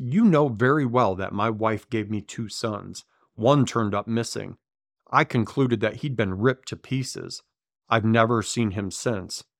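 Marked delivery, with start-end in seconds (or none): none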